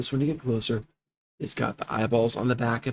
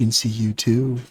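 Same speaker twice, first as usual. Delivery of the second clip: close, intimate, creepy delivery; 5 dB louder than usual. Game narrator voicing a creature speaking so only one player hears, very quiet. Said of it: "It says very quietly".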